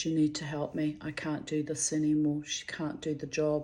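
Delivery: ordinary delivery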